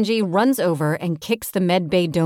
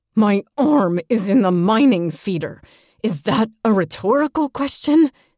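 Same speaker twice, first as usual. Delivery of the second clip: words forced and spat out through gritted teeth; 4 semitones higher, 4 dB louder than usual. Narrator reading a character's answer when asked how he's holding up: spat through gritted teeth. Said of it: "He spits out through his teeth".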